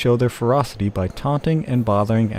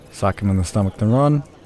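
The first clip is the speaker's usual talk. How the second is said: ordinary delivery, nothing marked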